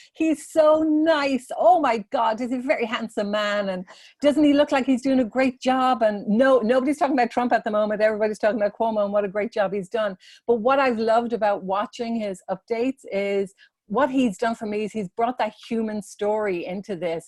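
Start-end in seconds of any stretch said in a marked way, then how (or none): 0.2-6.0 put-on Irish accent, pitched up. Quoting a woman who asks him about politicians whenever he calls, in her Irish accent. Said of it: "in her lovely Irish accent".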